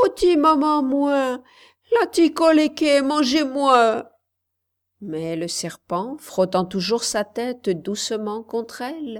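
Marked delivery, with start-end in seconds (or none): 0.0-4.1 much higher and louder shouting, crying out. A little girl cries out as a serpent rubs its head against her; crying out even louder. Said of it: "la petite fille cria encore plus fort".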